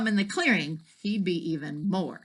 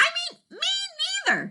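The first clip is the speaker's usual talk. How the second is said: very high, tiny, squeaky mouse voice. Reading a story aloud, voicing the mouse's reply in a little tiny voice. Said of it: "said a little tiny voice".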